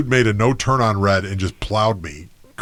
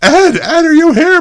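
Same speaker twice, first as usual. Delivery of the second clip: put-on frantic scream, higher and louder; 8 dB louder than usual. Retelling how mom called out for her son: imitating mom screaming frantically. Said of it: "going frantic, like, screaming".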